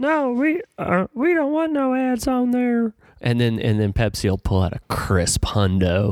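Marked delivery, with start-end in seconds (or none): 0.0-2.9 very high-pitched, slow, drawn-out, deliberate put-on voice. Imagining the listener turning down an advertiser, imitating Ethan. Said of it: "I'll do my impression".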